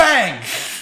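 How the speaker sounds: sudden, loud, high-pitched yell.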